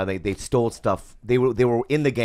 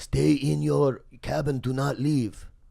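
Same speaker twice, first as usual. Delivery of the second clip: slow, deliberate, put-on Korean accent; 6 semitones higher than usual. Retelling the ferry captain's order to the kids on board, in a korean accent. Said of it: "I'm gonna do the accent".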